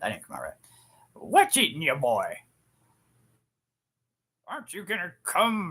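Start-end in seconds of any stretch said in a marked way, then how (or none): 1.1-5.7 very high cartoon voice, slow, swooping, drawn-out, sing-song. Answering a viewer's request with a Mr. Krabs impression. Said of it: "Mister Krabs impression".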